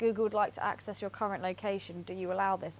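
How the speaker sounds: ordinary talk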